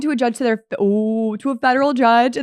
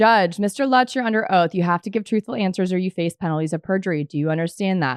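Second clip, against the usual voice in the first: plain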